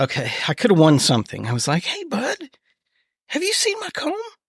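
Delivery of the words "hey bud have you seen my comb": very high, soft little voice, a whole octave up. Retelling what he asked his bud about a comb; high-pitched voice. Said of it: "got to do the high pitch".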